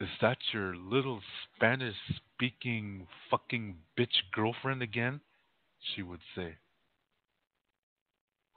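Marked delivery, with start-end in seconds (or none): none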